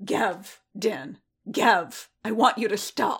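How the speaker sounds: angry, wounded snarl thick with hurt. Narrating Boba's line telling Din to stop, an angry, hurt snarl. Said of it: "Boba snarled, his voice thick with anger, with hurt".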